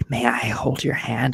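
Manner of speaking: put-on, imitated seductive, sexy voice. Retelling how a man might ask to hold hands: imitating a sexy voice. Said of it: "says in a sexy voice".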